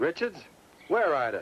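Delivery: eager, loud, high-pitched excited shouting. A sheriff demands to know where Ida saw Mr. Richards, shouting. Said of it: "You don't have to shout".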